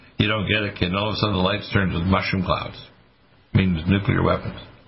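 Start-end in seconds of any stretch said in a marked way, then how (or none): none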